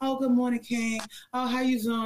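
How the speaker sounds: put-on, fake, phony niceness. Describing what a flown-out date would expect: fake phony greeting. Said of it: "I gotta do the fake phony".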